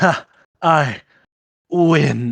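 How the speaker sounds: manic triumphant cry. Voicing the duelist collapsing after the blast: manic triumph. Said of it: "There's a maniac".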